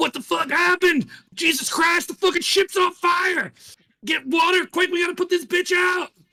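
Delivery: shrill, very high shouting, pitched way up. Voicing a ship captain shouting orders while the ship burns: NPC yelling orders. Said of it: "he's yelling. He's like".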